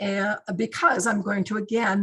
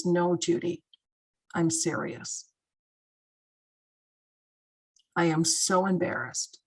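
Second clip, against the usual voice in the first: mock voice shifting suddenly to dead-serious earnestness; 3 semitones lower than usual. Retelling a crisis-line caller suddenly turning serious: imitating a caller turning serious. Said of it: "a sudden change in his voice".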